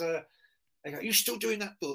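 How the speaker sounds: mock irritated, well-spoken voice. Retelling what a man asked when he got annoyed, imitating him talking pissed off. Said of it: "he sort of talks like this".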